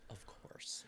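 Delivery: very polite, soft near-whisper. Retelling a clip of a fighter's reply: polite Nate Diaz impression. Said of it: "in the most polite Nate Diaz you'll ever see him".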